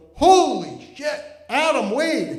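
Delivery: slow, drawn-out yell. Retelling a senior's remark from a passing car: imitating someone yelling. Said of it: "he yells out the window".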